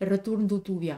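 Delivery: put-on Portuguese-accented delivery. Speaker repeats the line of someone who comes in all honeyed, Portuguese accent. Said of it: "je le fais avec l'accent portugais".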